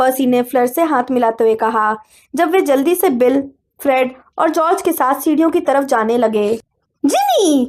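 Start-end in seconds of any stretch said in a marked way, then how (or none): 7.1-7.7 angry roaring shout, pitched high. Reading a scene where a mother calls her daughter back: roaring a name. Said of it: "Mrs Weasley गर्जी।".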